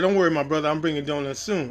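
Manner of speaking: plain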